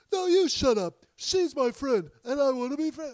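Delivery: very high, shrill, cartoon-like shrieking outburst. Acting out young Norman arguing with his mother; Norman Bates impression. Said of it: "Now it really is turning into Rocky Bullwinkle".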